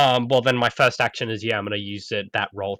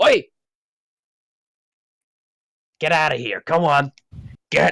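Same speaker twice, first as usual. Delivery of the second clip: loud, high, swooping shout; 6 semitones higher, 6 dB louder than usual. Answering the game master in character, driving off a hostile dog: shouting at a dog. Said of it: "what do you shout at him?".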